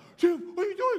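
acted-out shrill, high, loud, freaked-out panicked cry. Retelling a brother in the backseat while the car rolls: imitating brother freaking out. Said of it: "my brother in the backseat's freaking out".

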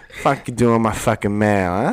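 loud, exaggerated, turned-up Philly accent. Describing their look, the speaker turns up the Philly accent: turned-up Philly accent. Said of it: "Just turn up the Philly accent a little bit".

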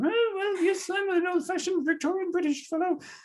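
high nasal voice. Speaker describes an old interview, imitating Wells's high-pitched nasal voice. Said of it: "He's got this like high pitched nasal".

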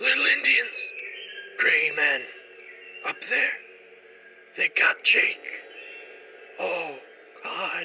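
raspy, hoarse, rasping voice. Narrator voicing a dying man gripping your jacket collar, raspy voice. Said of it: "he rasps".

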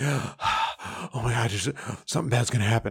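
panicked, gasping delivery.

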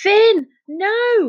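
very high-pitched, shrieked cry. One of the children, as a companion throws himself over the boat's edge, shrieking. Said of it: "shrieked Jazz".

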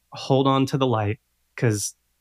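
ordinary talk

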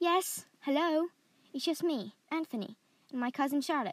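bright cheerful voice. Narrator reads a cousin answering an approaching voice, calling out cheerfully. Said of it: "he called out cheerfully".

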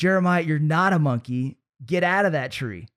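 mock livid angry scolding voice. Retelling mom's order to get out of the tree: imitating livid mom. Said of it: "she gets livid".

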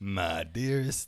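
southern-accented cartoon rooster voice. Drafting a message opener while joking: Looney Tunes rooster voice. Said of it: "I always try to sound like, uh, the, the rooster from".

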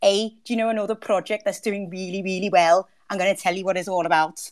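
jokey put-on Liverpool accent. Suggesting doing accents instead, then showing off a really funny Liverpudlian accent. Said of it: "a really funny Liverpudlian accent".

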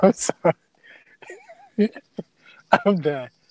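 talking through laughter. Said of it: "Stop laughing".

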